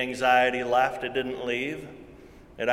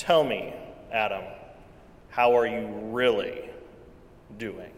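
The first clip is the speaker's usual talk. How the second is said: low, deep baritone voice; 2 semitones lower than usual. Recounting a church leader speaking to him a second time: Dean Erkenbrack's deep baritone. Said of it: "he said with his deep baritone voice".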